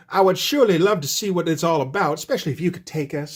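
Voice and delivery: charming, laid-on put-on Southern accent. Retelling a scene where Sharon turns on the charm, in Sharon's put-on Southern accent. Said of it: "she adopts a Southern accent".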